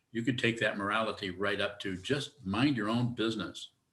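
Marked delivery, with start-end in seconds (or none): 2.4-3.6 parental, parent-like tone. Summing up an idea of morality in one short phrase: parental tone. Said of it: "You notice the way I say that, very parental".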